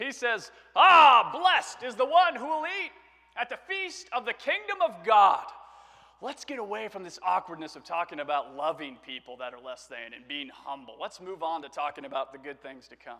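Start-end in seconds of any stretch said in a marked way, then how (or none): 0.7-5.4 very loud, high, booming bellow. Retelling a man's line in a story about Jesus, bellowing. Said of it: "he bellows out this".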